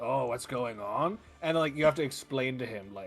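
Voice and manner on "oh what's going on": slow, dazed, lost, bewildered, confused-sounding voice. Acting out a lost man who doesn't know what's happening: imitating a confused man. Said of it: "and he's just like".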